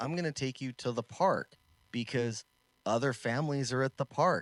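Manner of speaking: plain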